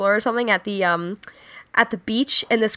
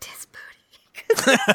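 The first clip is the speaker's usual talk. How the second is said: soft, hushed, breathy whisper; 2 semitones higher than usual. Speaker recounts his response to a question, imitating a whisper. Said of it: "He whispered".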